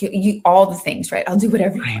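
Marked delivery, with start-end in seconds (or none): 1.3-2.0 desperate, begging, pleading tone. Retelling a prayer said while unable to move: retelling own pleading prayer. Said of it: "pleading with God".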